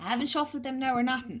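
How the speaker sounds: strong Irish accent. Repeating own words just said: imitating own very irish accent. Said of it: "I sounded very Irish there".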